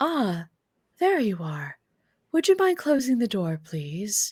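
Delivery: pleasant, sing-song, resonant, artificial synthetic voice. Game master voicing the artificial voice greeting the players as they walk in, pleasant resonating artificial voice. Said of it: "you hear a a pleasantly resonating voice, uh, that's artificial in nature".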